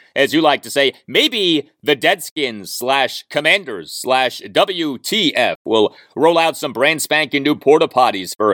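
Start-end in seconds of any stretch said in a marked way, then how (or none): none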